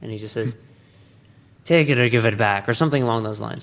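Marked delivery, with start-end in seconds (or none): 1.7-2.7 severe, stern, no-nonsense tone. Retelling a scene where Luthen is stopped at a door: Luthen impression, stern. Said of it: "it's my Luthen impression".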